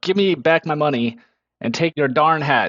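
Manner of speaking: angry, threatening, intimidating, somewhat mad delivery. A player's character demands money back, rolling intimidation: mad, intimidating. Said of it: "I'm gonna get kind of mad".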